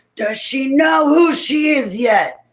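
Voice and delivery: high, slow, loud, menacing male voice.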